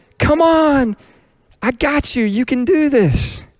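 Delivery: very high-pitched, cheering-on, coaxing voice. Coaxing kids or grandkids to take another step, in a high-pitched voice. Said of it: "I would say in a high-pitched voice".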